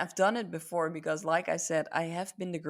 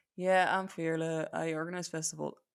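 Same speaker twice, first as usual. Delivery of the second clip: put-on disconnected, detached, unenthusiastic going-through-the-motions delivery. Recalling telling people about organizing festivals, acting detached and disconnected. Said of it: "you hear it in my voice, the way I say it. ... I wasn't connected to it at all".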